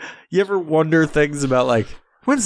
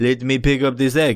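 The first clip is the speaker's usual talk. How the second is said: mock broken English, lower pitch; 4 semitones lower than usual. Retelling what a toy-unwrapping video woman said: imitating a woman with broken English. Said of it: "she sounded as if she didn't know English".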